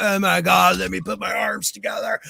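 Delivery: creaky surfer-dude voice. Mocking an actor's take on a character as surfer-like: Keanu Reeves surfer voice. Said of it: "Keanu Reeves was like a surfer Constantine".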